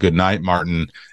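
ordinary talk

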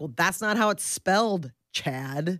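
ordinary talk, nothing marked

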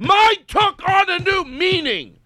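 high, loud, slow mocking shout.

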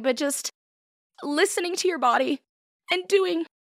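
choked-up, very high, halting, breaking, tearful voice. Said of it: "through that without crying".

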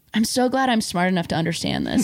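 plain

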